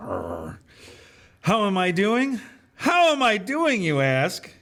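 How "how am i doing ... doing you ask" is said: very high, furious, angry squeal. At a table of laughing past masters, [name] answers in [name]'s high-pitched angry voice. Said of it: "[name] said in a high pitched, angry voice".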